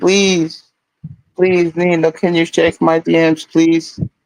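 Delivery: mock imploring, pleading, begging please-please voice. Reading aloud a chat message from player one: imitating someone begging. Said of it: "he's begging in the chat".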